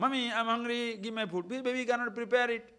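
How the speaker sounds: put-on high, crying, whiny baby voice, pleading. Illustrating a point, the speaker acts out a hungry baby, imitating a crying baby. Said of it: "the baby is crying".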